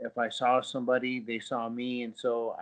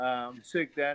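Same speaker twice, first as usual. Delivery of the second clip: plain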